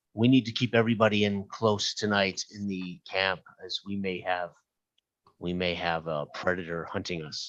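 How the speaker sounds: quiet, hushed half-whisper, kept private. Retreating back to Magda and speaking to her, half-whispering. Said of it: "and just whisper to her".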